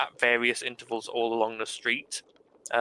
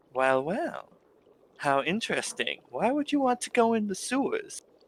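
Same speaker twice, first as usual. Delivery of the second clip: very high-pitched, swooping character voice; 9 semitones higher than usual. Voicing the Silk Cheek's owner, asking the players about the sewers: voicing the Silk Cheek's owner. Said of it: "looks at you and goes".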